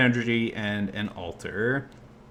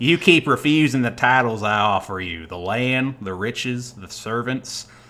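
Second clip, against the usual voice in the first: drawling put-on country accent; 4 dB louder than usual. Reading an elf monarch's words to a kneeling warrior, country accent. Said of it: "I'm going to give him a country accent".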